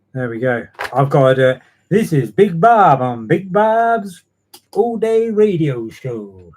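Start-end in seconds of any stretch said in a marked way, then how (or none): 1.9-6.3 bad, awful fake American accent, drawn out, slow. Introducing himself as a radio show host: awful put-on american accent. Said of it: "That's an awful American accent".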